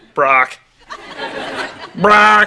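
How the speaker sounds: high, squawking parrot call. Teasing another speaker about his name: imitating a parrot. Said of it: "Sounds like a parrot".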